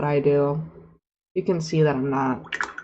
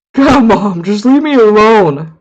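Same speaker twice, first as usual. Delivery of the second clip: put-on very loud, slow, sulky thirteen-year-old monster voice; 4 semitones higher, 9 dB louder than usual. Voicing a beholder as a thirteen-year-old: angsty teenage beholder voice. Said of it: "Thirteen-year-old teen angsty beholder".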